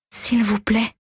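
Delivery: whispering in a broken voice. Reading a story aloud, a character pleading to forest gods: whispering in a broken voice. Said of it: "chuchote-t-elle d'une voix brisée".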